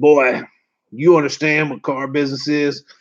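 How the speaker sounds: put-on gruff old man's voice. Retelling an old salesman's first question to a nervous newcomer: imitating a gruff voice. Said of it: "real gruffy voice".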